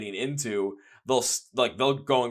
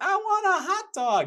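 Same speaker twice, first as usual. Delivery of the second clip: put-on very high, slow, drawn-out ten-year-old voice. Recalling being ten or eleven, in a ten-year-old kid voice. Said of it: "in that voice too".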